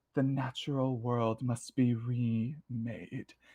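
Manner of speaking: slow, hushed, drawn-out hissing. Narrating the scene, voicing her as she speaks toward you, hissing. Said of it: "she hisses in your direction and she says".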